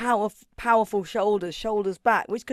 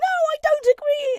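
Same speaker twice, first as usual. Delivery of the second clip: very high, shrill, shrieky, slow and drawn-out; 5 dB louder than usual. Retelling a woman objecting in Parliament, imitating a shrieky high voice. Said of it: "the woman does shriek too much".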